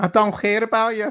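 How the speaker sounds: put-on high-pitched Liverpool accent. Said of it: "I wish I went all Scouse then with a very high voice".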